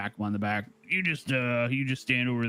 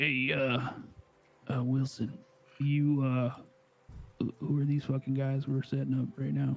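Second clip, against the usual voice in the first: hushed whisper; 3 semitones higher than usual. Speaking in character, asking a companion about the targets: whispering. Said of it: "I whisper over to Francis".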